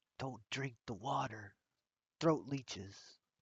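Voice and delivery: very soft, hushed half-whisper. Leaning over in character to warn another character: half-whispering. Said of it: "I lean way over and whisper to Murloc".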